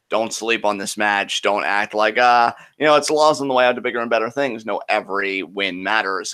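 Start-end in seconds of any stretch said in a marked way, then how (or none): none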